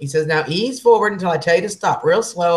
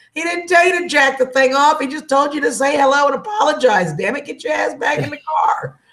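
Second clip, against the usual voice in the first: put-on scream, higher pitch; 9 semitones higher than usual. Retelling a kid leaning out the car window, imitating someone screaming. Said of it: "one of the kids in the back seat with me screams".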